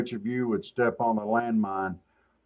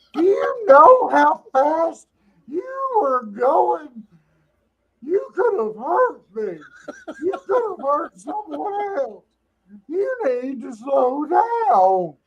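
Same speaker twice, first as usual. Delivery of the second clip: very high scolding wife voice, drawn out downward. Comparing a traffic officer's questions to a wife, imitating a wife. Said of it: "they start to sound like a wife".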